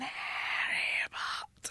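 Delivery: breathy whisper, nearly all breath. Acting out a script scene, Voldemort's line at a dream's end: Voldemort voice. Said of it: "the voice of Voldemort going".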